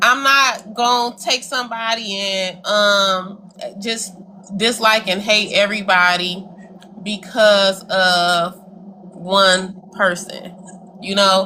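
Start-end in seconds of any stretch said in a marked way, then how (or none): 7.0-10.6 very slow, drawn-out speech, every word stretched. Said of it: "that's why you're talking slow".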